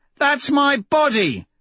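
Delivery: sore, grumbling, complaining tone. Severo, just prodded in the back of his spine, complaining. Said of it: "Severo complains".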